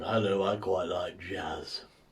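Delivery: low, slow, lumbering put-on dinosaur creature voice. Following one dinosaur impression with another dinosaur impression. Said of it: "Here's my other dinosaur impression".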